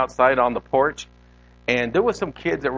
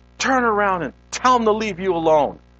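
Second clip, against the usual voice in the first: mock high, urgent, insistent scolding tone; 6 semitones higher than usual. Recalling second grade, quoting his mom yelling at him: retelling a yelled command. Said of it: "she's yelling at me".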